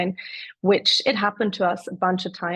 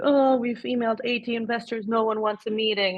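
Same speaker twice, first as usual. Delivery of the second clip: mock deflated, let-down, dejected, crushed tone; 3 semitones higher than usual. Retelling what founders say after failed email outreach: imitating someone crushed. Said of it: "they're super crushed, like".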